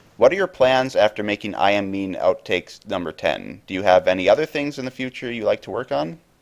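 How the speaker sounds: usual speaking voice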